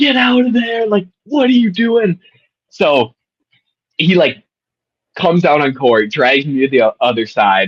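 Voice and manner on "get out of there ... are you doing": put-on, very high scream, sounding far away. Retelling how a man screamed at the speaker from three courts away, imitating a scream. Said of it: "starts screaming from like 3 courts down".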